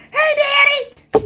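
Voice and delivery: put-on very high, childlike, girlish little-girl voice. Retelling greeting her daddy on the phone: imitating own little girl voice. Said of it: "my daughter sounds just like a little girl".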